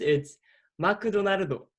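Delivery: Japanese pronunciation. Asked to say McDonald's in three accents, giving the Japanese one; Japanese accent. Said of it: "And in Japanese".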